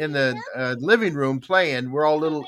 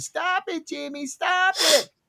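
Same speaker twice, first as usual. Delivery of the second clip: mock child yell, much higher, slower; 12 semitones higher than usual. Speaker retells their sister yelling in front of their mom, imitating Kathy yelling. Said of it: "she started yelling".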